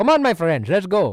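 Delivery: loud, high, animated-film Indian accent. Showing off a favorite accent from a movie character, Madagascar Indian-accent guy impression. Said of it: "the guy in Madagascar that speaks like this".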